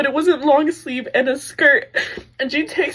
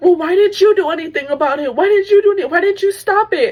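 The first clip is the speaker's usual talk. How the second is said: screaming, jeering, taunting delivery; 2 semitones higher than usual. Speaker retells a cop taunting a boyfriend who just lost his girlfriend, retelling a screaming taunt. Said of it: "screaming, taunting".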